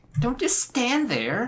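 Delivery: high, slow, sassy character voice.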